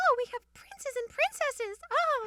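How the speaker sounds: very high, loud, squeaky princess voice.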